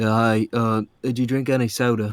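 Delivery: put-on deep voice, British accent slipping in. Retelling own words to mom after waking: imitating own british accent. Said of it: "realized I was having an accent to it".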